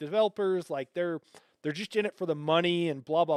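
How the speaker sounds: normal talking voice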